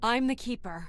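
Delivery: full conviction. Told to say it like they mean it, declaring themself the new Keeper, with conviction. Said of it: "Say it like you mean it".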